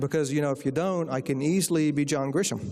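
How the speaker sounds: normal talking voice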